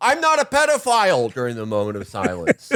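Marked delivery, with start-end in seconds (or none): 0.0-1.3 shrill, very high-pitched screamed outburst. Imagining a leader at a moment of silence: imitating Donald Trump screaming. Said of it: "just screaming".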